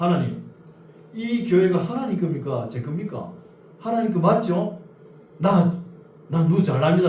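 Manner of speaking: angry, weary, loud, high, exasperated tone.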